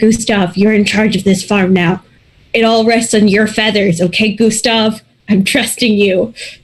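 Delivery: ordinary delivery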